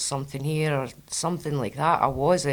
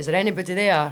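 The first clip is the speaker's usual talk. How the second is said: mock hollering shout, growing steadily in volume; 4 semitones higher, 4 dB louder than usual. Retelling a man at a seance calling to spirits: imitating someone shouting louder. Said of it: "He's shouting louder".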